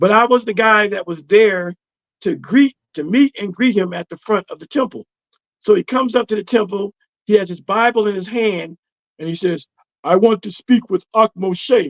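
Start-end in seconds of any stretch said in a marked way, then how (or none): 10.0-11.9 put-on heavy Jamaican accent, laid on thick. Retelling a visitor's request at the temple entrance, in a strong Jamaican accent. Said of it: "in a strong Jamaican accent".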